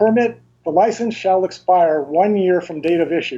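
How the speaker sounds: ordinary delivery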